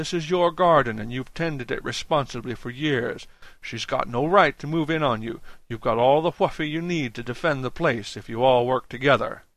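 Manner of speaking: ordinary delivery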